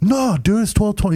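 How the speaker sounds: angry outburst, going off. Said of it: "He starts going off on me".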